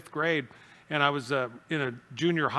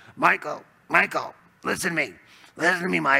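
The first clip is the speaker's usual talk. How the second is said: put-on raspy voice, louder; 5 dB louder than usual. Retelling how a man from fifth grade pulled him close and spoke, raspy voice imitation. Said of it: "he had this voice".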